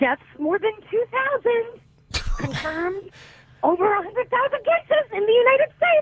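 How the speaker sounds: mock hollering, high-pitched and yelled. Telling how he interrupts her every half hour, imitating him yelling at the TV. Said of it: "I hear him yelling at the TV".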